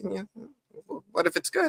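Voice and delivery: shaky, wobbly voice. Imitating Elgin telling Ellis things will be okay: shaky Elgin imitation. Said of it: "the way he was saying it was kinda shaky".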